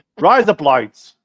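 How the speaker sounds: put-on Australian accent. Trying out the phrase after a co-host's joke, in an Australian accent. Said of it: "it sounds like Australian accent saying "razor blades."".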